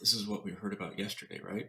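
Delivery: soft whispered delivery. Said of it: "I heard him whisper".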